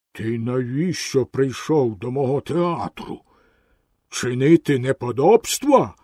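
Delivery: low, frightening, hoarse voice. Narrator reads the theatre owner questioning a puppet, scary hoarse voice. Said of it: "запитав у Пінокіо страшним захриплим голосом хазяїн".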